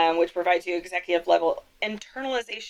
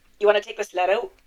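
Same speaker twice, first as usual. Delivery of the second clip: put-on mock Minnesota accent. Riffing on Midwestern accents, a speaker asks a question in a put-on Minnesota accent.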